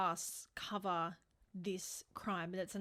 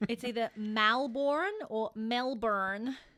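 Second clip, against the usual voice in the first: put-on American pronunciation, hard r; 3 semitones higher, 6 dB louder than usual. Explaining how Americans pronounce Melbourne, putting on an American hard-R accent. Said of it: "American accents have that very hard R".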